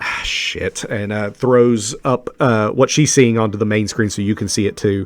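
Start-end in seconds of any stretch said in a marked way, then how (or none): 0.0-0.8 soft, breathy, whispered mutter under the breath. A narrator voices the captain watching the planet monitor, muttered under breath. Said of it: "she just mutters under her breath".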